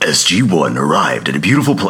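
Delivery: low storytelling narrator voice. On a podcast, starting to read a wiki summary aloud: best narrator voice. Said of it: "in my best narrator voice".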